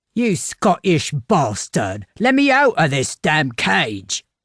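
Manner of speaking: gruff, distant-sounding voice. A caged captive calls out from a chamber along the corridor, gruff voice. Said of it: "The gruff voice came from a chamber".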